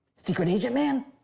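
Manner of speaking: quiet whispering. Calling for the secret agent man who has the right utensil, whispering.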